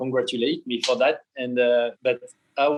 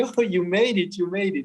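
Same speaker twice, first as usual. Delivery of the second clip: high, shrill, put-on screaming; 6 semitones higher than usual. World champion retells his wife calling him after the finish, imitating her screaming. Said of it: "she was screaming at me".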